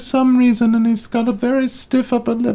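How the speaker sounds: very high falsetto voice, flipping up. Speaker mocks a movie, doing an Eddie Redmayne falsetto impression. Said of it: "talks in a falsetto through the whole movie like this".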